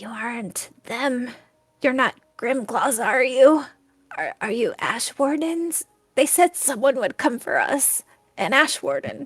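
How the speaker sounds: hoarse, gravelly whisper. Voicing a woman just unblindfolded, speaking to the group: rough raspy whisper. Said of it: "she will whisper, and her voice is like um rough and like raspy".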